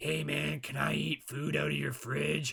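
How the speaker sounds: weird, high, slow, creaky, rough-edged creature voice. Describing weird beings who show up uninvited: impersonating a weird shadow being. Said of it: "that's a great impersonation".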